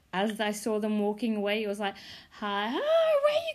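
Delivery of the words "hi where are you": very high, slow squeaky chipmunk voice. Speaker recalls calling after two girls walking away: recreating own chipmunk voice. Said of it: "My voice literally turned into a chipmunk".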